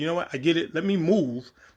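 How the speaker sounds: usual speaking voice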